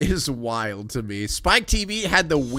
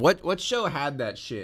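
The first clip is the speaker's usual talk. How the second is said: ordinary delivery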